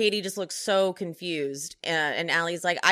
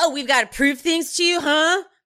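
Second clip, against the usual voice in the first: put-on drunk voice, higher and louder; 9 semitones higher, 7 dB louder than usual. Retelling what Sandoval said in a scene: imitating drunk Sandoval. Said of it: "he's wasted".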